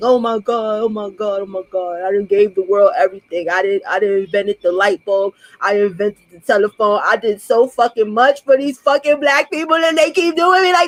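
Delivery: mock, tearful wailing through sobs. Mocking someone who got off a live stream, imitating someone crying. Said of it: "in the backyard crying in the grass".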